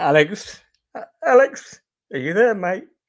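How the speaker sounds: voice catching with emotion. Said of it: "I'm choking up already".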